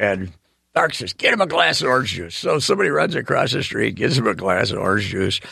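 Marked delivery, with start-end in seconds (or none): none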